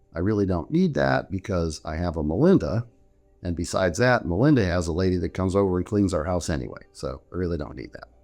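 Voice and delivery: normal talking voice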